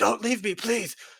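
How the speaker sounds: very high, pleading, calling-out voice. Narrator voicing a character on the ground near a bear, calling out. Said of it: "he sort of calls out and is like".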